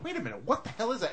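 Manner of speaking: high, fast, startled alarm, blurted out.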